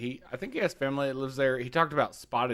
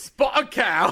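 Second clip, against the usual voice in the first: very high-pitched, loud London accent; 10 semitones higher, 6 dB louder than usual. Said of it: "you sound like you're from London".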